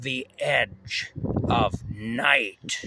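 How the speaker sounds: eerie, creepy, very slow announcer voice. Recalling a show opening with organ music, creepy announcer voice. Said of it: "this really creepy voice".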